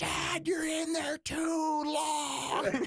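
put-on very high-pitched little-kid scream. Retelling the speaker's 4-year-old daughter at the door, imitating a child screaming. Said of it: "And she's screaming".

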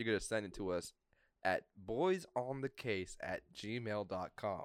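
slow, deliberate, spelled-out delivery.

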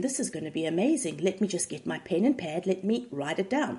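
ordinary delivery

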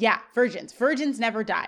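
ordinary talk, nothing marked

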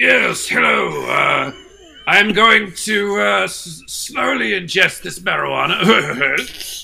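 regal character voice, high and creaky. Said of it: "It's Regal Rogan".

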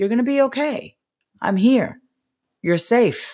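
gentle, calm, reassuring, soothing tone. Reassuring a stressed, overwhelmed inner child, in a calm, soothing tone. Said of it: "You see how I changed my tone? You see how I changed my volume when I want to reduce stress?".

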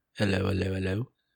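put-on British accent. Greeting the other speaker to start off: put-on British accent. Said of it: "Should I have not gone with a British accent?".

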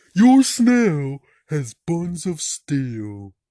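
very loud, dopey, swooping cartoon voice. Show off your impersonation of a cartoon character: do a Patrick impersonation. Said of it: "here's my impersonation of Patrick".

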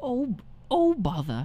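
put-on old man voice, pitched very high. Given a lead-in, the speaker says the catchphrase in a Winnie the Pooh voice. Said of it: "And now, Winnie the Pooh".

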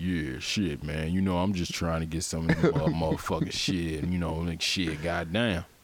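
put-on American vernacular dialect accent.

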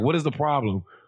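put-on acted sassy kid voice. Imitating a future teenager walking around with an attitude: imitating a kid with an attitude. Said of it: "walking around the house with an attitude".

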